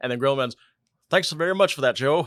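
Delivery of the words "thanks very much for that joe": put-on high-pitched, old-fashioned fifties man voice. Retelling a comic scene where Gorilla Man thanks Joe: 1950s man voice. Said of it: "real fifties man, man kind of voice".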